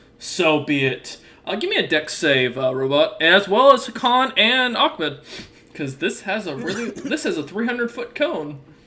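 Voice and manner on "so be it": great dragon character voice. Voicing a great worm that glares and speaks to a player: dragon character voice. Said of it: "it nods and goes".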